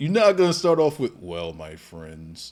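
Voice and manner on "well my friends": low, flat, monotone intro announcer voice. Mocking the other speaker's opening line: imitating a monotone Undertaker voice. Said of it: "start me out sounding like, like the Undertaker".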